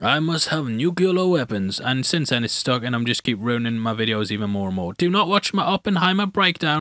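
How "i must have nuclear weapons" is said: put-on Russian accent. Recalling an impression he used to do: Russian accent impression. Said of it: "an impression of a Russian guy".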